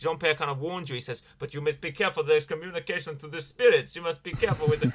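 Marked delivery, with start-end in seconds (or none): 1.4-4.9 bad French accent that slides into a Russian accent. Retelling a warning Jean-Pierre gives, in a Jean-Pierre voice sounding Russian. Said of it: "He sounds Russian".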